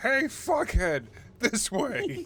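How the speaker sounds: very slow, high, drawn-out, swooping in-character scream. Playing a character screaming into a portal: screaming in character. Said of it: "screaming into it".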